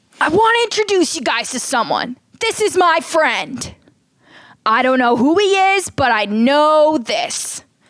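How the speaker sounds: high, slow, overly emotional, overwrought delivery. Acting out a bit, a speaker introduces a friend to the group: overly emotional. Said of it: "take it down a notch".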